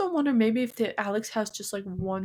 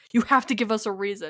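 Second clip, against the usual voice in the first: put-on aggressive tone, louder; 4 dB louder than usual. Retelling what Tanner said to the spirit: imitating Tanner's aggressive tone. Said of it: "Tanner was kind of getting a little bit aggressive in his tone".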